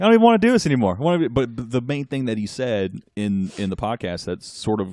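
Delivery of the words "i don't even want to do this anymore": very loud, very high, heavy put-on Boston accent. Quoting a man from boston who was on the podcast, imitating a very heavy boston accent. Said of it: "very heavy Boston attitude and accent".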